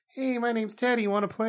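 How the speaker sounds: pitched way up, like a squeaky toy. Acting out a scenario where Teddy Ruxpin greets a drunk person: Teddy Ruxpin voice. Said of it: "he's like".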